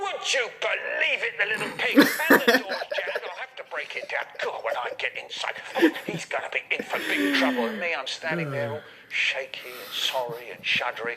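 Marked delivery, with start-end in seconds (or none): 0.0-7.6 mock very high, loud, shrill, raging, furious bellow. Retelling how his dad reacted to the locked door, imitating dad roaring. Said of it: "he's roaring".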